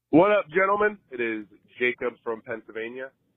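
a little hoarse and scratchy. A caller named Jacob leaves a voicemail for the hosts, slightly raspy voice. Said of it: "Forgive me if I sound a little raspy".

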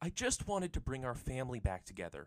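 yelling. Narrator reads a girl telling her brother why she acted, yelling. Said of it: "she yelled".

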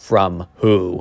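put-on eerie, weirdly ominous, foreboding tone. Retelling how the kid asked what video was playing: imitating a weirdly ominous tone. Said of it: "he said it in such a weirdly ominous way".

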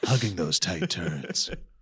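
very low, slow, sultry, sexy car-ad voice. Asked by the other speaker to repeat a phrase, in a slow sexy car-commercial voice. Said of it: "say that slower like you're in a sexy commercial".

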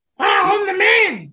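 put-on loud, very high, belted Irish accent. Performing the impression that the other speaker asked for: Becky Lynch impression. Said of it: "It's pretty spot on".

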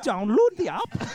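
put-on mock Danish accent. Asked by the others to reach the international audience, answering in a Danish accent. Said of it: "Danish accent".

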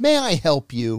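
mock, loud, slow, actively rude tone. You recount going to the door and what you said to the man there, retelling being actively rude. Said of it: "I was like actively rude".

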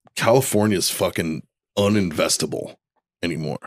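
usual speaking voice

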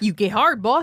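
put-on Texan-accented voice. Demonstrating what to tell him, in a put-on Texas accent. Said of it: "I do it in this like Texas accent".

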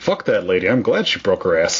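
plain

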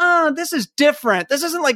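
put-on complaining whine. Retelling a film scene where a pupil gripes to his old master, mock complaining.

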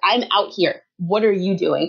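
mock confrontational, aggressive, in-your-face tone. Retelling how a woman answered a man yelling from the side, retelling a confrontational retort. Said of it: "got in this man's face".

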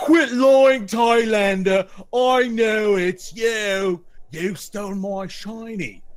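shrill, booming, slow, drawn-out high loud delivery. Voicing the Cyclops accusing a man of theft: Cyclops voice. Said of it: "the Cyclops looks at him and says".

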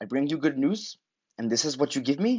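agitated, irritated, pissed-off retort. Acting out a TV character's line to the inspector: imitating angry Grace. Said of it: "she's pissed".

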